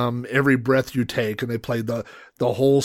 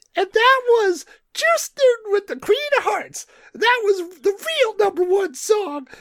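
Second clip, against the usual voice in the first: tiny squeaky little voice, very high. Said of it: "this little tiny squeaky voice".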